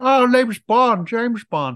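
pitch way up, pushed out. Imagining Kermit the Frog playing James Bond: Kermit as James Bond. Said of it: "Kermit would be James Bond".

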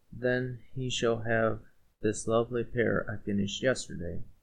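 plain reading voice

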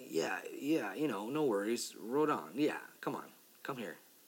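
ordinary delivery

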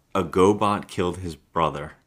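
plain

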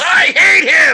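mock scream, very high, loud, raw shriek. Retelling the moment Shane yells on screen: imitating Shane yelling. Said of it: "and Shane just yells".

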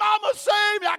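very high, loud scream of pain. Telling a story of an alligator attack, voicing the boy, retelling a child's scream. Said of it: "Can you imagine the screaming".

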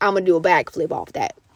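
heavily laid-on, put-on Alabama accent. Retelling what a motorcycle rider from Alabama said: Alabama accent. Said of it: "That's my Alabama accent".

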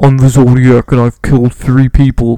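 booming, deliberate, slow and heavy voice. Imitating how a man speaks, like the Zodiac killer on the phone to police: imitating the Zodiac killer on the phone. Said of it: "he speaks like this".

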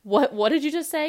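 confused, baffled, high, loud shout.

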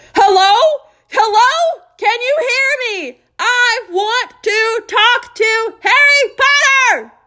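very loud, very high, very slow, drawn-out yelling. Ron calls on the telephone and Uncle Vernon answers; Ron is yelling very loudly. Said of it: "Ron was yelling so loudly".

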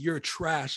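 put-on, loud, yelled delivery. Retelling taunting a player from the bench, retelling own yelling. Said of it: "I'm just yelling at this kid".

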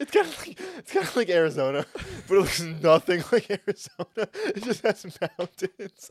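very high, swooping, tearful laughing speech. Joking that a game map looks like Arizona, crying with laughter. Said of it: "You're literally crying".

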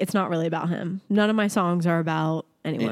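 plain

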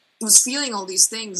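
ordinary talk, nothing marked

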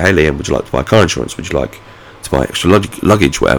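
plain

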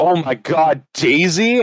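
very slow, stretched, high excited scream. Retelling a reaction to something popping up on screen: retelling an excited scream. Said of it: "I verbally screamed out".

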